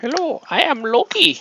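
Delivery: bad fake German accent, very high, slow, shrill, drawn out. Greeting while painting a Loki figure: Loki voice with German accent. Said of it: "I don't know why Loki has that accent".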